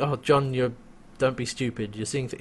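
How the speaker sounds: ordinary talk, nothing marked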